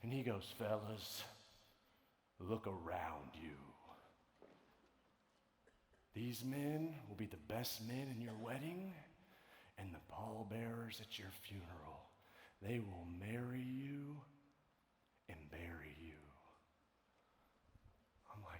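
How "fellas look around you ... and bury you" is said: low, deep, cool-guy delivery. Retelling what a man told the fellas: imitating a deep, cool voice. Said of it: "he said it in that deep, cool voice".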